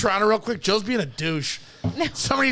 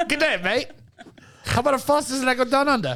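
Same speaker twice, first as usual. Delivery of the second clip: put-on Australian-accented voice; 4 semitones higher than usual. Describing an australian guy who comes up behind you, the speaker voices him: australian accent. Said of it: "an Australian guy".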